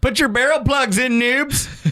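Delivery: silly fake Canadian accent, very high pitch. Speaker retelling a friend's paintballing line, doing Clinton's fake Canadian accent. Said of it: "put on a fake Canadian accent and just go".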